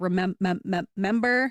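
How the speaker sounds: demonstrated stutter repeating a syllable. Showing a syllable repetition stutter on "remember": demonstrated syllable repetition stutter. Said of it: "that whole syllable".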